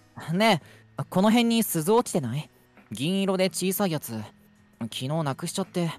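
put-on plain, boyish young boy voice. Reading a character's line aloud, in a young boy voice. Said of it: "普通に少年感じで読めばいいんかな".

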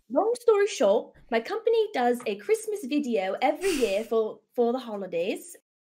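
loud, swooping, bad fake English accent with Indian tinge. Asked to tell a story in an English accent, the speaker begins in a bad English accent. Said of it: "That was like half Indian".

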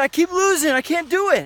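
put-on high, frustrated, whining child voice. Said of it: "he got frustrated on our team".

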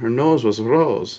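slow, trilled, rolled R on "rose". Repeating a quoted phrase, imitating her rolled R accent. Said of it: "I like how she rolls her R there".

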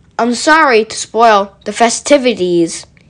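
ordinary delivery

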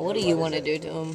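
ordinary delivery

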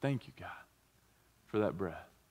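hushed, very soft, very quiet whisper. Leading everyone to give thanks after a deep breath: whispering. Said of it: "just whisper".

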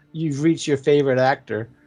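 ordinary delivery

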